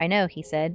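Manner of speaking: plain reading voice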